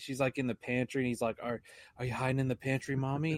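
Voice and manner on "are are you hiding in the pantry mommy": put-on taunting tone. Retelling a movie scene of a son chasing his mother: imitating a taunting voice. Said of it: "he's just all taunting her like".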